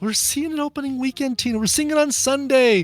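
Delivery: high-pitched, loud mock voice.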